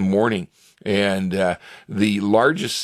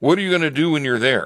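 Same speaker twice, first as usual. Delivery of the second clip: mock suspicious official tone, higher; 6 semitones higher than usual. Retelling a call from the embassy: imitating a suspicious-sounding official. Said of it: "real suspicious sounding".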